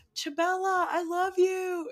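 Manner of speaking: mock very slow, high, drawn-out yell. Recounting calling out to Chabella across the dorm, retelling a yell across the house. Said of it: "i'm like yelling through like the dorm".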